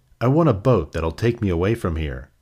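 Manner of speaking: ordinary delivery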